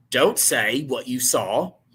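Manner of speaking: attempted Australian accent. Speaker retells what a man in a camera video said; attempted Australian accent. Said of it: "I was trying to be Australian".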